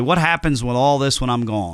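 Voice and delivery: ordinary talk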